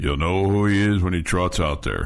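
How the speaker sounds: pitch dropped way down into deep chest voice. Retelling how the coach answered who the starting quarterback would be, deep Coach Kingsbury voice. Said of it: "in his Kingsbury voice, which was really deep".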